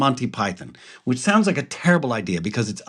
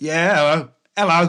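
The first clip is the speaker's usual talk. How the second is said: put-on Cockney accent, much higher pitch; 5 semitones higher than usual. Recalling a sketch, the speaker quotes Leonardo da Vinci answering, imitating a Cockney accent. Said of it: "And he's like this Cockney".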